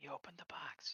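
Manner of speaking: barely audible hushed whisper. Speaking in character to a companion as a holocron opens: whispering. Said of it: "I whisper to one of them".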